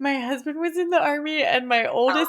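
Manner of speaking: talking through laughter. Explaining a running family joke to another speaker, laughing while talking. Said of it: "I'm so sorry I'm laughing so hard".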